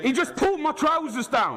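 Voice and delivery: very high, swooping shout. Protesting to officers during a search in a public place: shouting. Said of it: "Don't shout".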